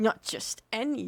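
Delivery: mock horse voice, proud and puffed-up. Retelling a game scene, the speaker imitates the talking horse: imitating the horse's proud tone. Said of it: "you can hear the pride in his voice".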